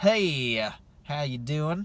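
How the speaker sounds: terrible put-on Texas accent, drawn out. Reading out prices by city, greeting Rio Grande Valley: terrible Texas accent. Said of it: "that's probably a terrible Texas accent".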